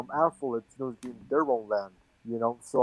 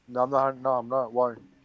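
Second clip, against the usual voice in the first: ordinary delivery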